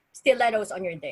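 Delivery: ordinary talk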